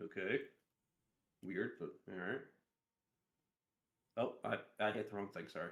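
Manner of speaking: speaking in a whisper. Answering a request for an athletics check in the game: whispering. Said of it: "You're also still whispering".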